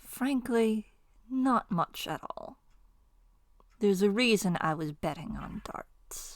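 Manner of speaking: very slow, soft, deliberate delivery. Answering in character how much money is in the pouch: speaking very slowly. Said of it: "takes a breath and says very slowly".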